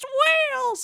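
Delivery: very high, thrilled, excited put-on yell. Retelling a film scene where Rat spots the whales: imitating Rat yelling excitedly. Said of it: "he's doing the same thing".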